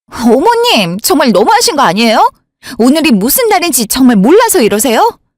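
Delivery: heated, accusing, angry outburst with swooping pitch. Confronting the mother-in-law about being ignored: shouting angrily. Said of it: "넌 왜 갑자기 소리를 지르고 난리야?".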